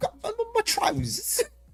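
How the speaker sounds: attempted British accent. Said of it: "I don't know how to do it".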